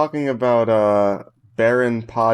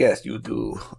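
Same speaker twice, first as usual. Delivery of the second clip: put-on Russian accent. In a cop skit, one character answers the others; Russian guy accent. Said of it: "This is my Russian guy accent".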